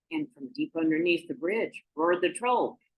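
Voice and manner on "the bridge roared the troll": ordinary delivery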